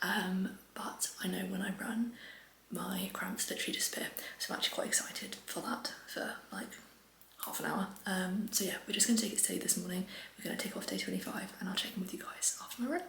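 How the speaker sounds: soft, quiet, hushed whisper.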